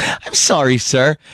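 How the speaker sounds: pleasant, courteous, polite little tone. Retelling a woman's line from a domestic violence ad: imitating a pleasant apology. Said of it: "she's so pleasant".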